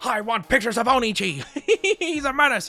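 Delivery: put-on angry voice. Imagining an editor demanding pictures of a menace: J. Jonah Jameson voice. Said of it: "Jonas Jameson voice".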